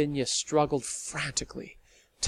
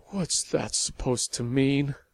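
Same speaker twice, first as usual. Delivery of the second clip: faint, weak, feeble voice. A woman questions another woman who let something slip, weak voice. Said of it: "in the weak voice which was all she could manage".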